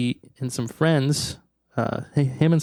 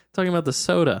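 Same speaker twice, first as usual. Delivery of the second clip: normal talking voice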